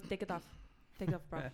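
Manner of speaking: put-on Russian accent. Retelling her Russian coach pulling her aside, in a put-on Russian accent. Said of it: "it's important because she's Russian".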